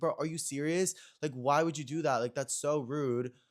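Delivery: irritated, exasperated, annoyed disbelief. Recalling a friend telling everyone the speaker had COVID: acting out past irritation. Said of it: "I was so irritated".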